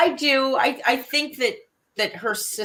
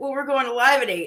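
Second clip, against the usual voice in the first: ordinary talk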